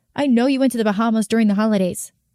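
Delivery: ordinary delivery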